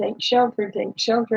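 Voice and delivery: ordinary talk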